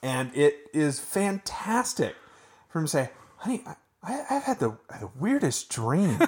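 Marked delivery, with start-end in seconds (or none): 3.4-6.2 put-on old man voice, pitched much higher. Recall the Newhart finish for the others, speaking his line in a pretty good Newhart impression. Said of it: "That's actually a pretty good Newhart you just did".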